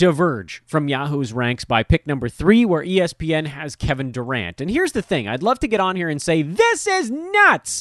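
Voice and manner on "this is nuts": weird, shrill, high-pitched, put-on screaming voice. Discussing draft rankings, scream in a Richard Kind and John Mulaney voice. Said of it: "That me screaming there was like the weirdest combination of Richard Kind and John Mulaney mushed into one weird voice".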